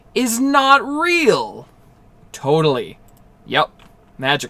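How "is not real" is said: very high, slow, deliberate, very stretched and drawn out. A man repeats his point to someone not hearing him, spoken slowly. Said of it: "he spoke slow".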